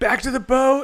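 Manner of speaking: shouting. A player's character, as giant bugs crawl out of the woods, yelling. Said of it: "I yell".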